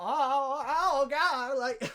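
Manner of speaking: high, loud, by-the-numbers movie-character cry. Describing a movie character, imitating Jay Baruchel. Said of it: "the best Jay Baruchel impression I've ever seen".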